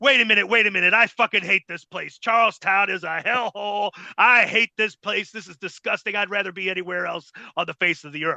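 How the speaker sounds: mock-hateful villain rant. Retelling how a wrestler suddenly turned on the Charlestown crowd, retelling a heel's hateful rant. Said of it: "flipped between babyface and heel".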